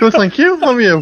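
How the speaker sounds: very high-pitched voice, shot way up. Answering a birthday phone call, voice gone way up. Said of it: "Your voice has gone up about 3 octaves".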